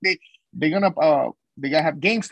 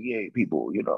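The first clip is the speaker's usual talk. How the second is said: very low, soft, sexy voice; 9 semitones lower, 7 dB quieter than usual. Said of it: "like you were trying to be like".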